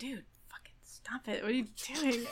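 unvoiced, hushed urgent whisper under the breath.

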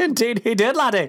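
Scottish brogue, voice very high. Answering a question about President Roosevelt, in Scott's Scottish accent. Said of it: "That's Scott".

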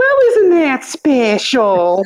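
slow, high, swooping, sing-song, drawn-out delivery. Quoting a catchphrase about Juneteenth tomorrow: Church Lady voice. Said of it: "as church lady would say".

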